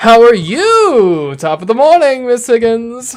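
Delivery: very loud, high, grating, annoying put-on voice. Reading lines at a scene partner's request, in a high-pitched annoying voice. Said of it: "do the voice higher and more annoying".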